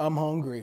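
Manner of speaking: the softest little voice, very quiet and hushed. Quoting the reply after she asks 'what, Cameron?', very soft voice. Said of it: "in the softest voice".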